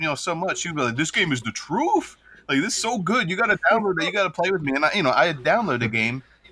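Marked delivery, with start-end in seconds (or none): 1.0-4.7 mock gushing, hyped-up, pitched-up excited voice. Retelling how a friend hyped up a game: imitating Sean hyping a game. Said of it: "he would hype 'em up so".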